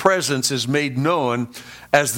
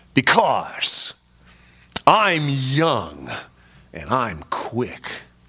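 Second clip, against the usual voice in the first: mock, very slow, cynical, swooping sarcastic tone; 2 semitones lower than usual. Retelling a young man's answer to a woman whose parking place he took: mock-sarcastic reply. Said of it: "very cynically and sarcastically replied".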